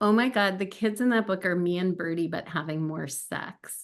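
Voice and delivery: ordinary talk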